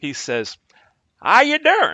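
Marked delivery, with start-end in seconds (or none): 1.2-1.9 fake southern accent, very high and louder. Retelling a first-night phone call, Mister Harrell's fake Southern accent. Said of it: "I'm gonna fake a southern accent".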